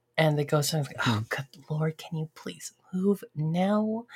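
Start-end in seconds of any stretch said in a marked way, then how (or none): 1.0-4.0 plain feminine speaking voice. Voicing a frustrated woman an adventurer overhears: lower feminine voice. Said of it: "it's a feminine voice, and it's, like, a little bit lower".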